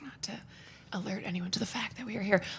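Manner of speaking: hushed whisper. Podcast co-host filming without alerting anyone, whispering. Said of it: "we're whispering".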